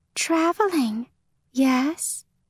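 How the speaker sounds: ethereal, otherworldly, high-pitched feminine voice. Narrator reading a fae wisp speaking to the traveler: ethereal feminine voice. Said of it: "one says with an ethereal feminine voice".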